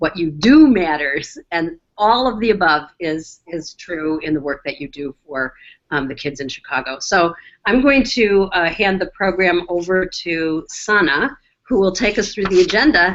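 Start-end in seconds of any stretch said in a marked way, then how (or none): 0.0-1.4 "do" stressed and punched louder. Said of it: "we can emphasize different words".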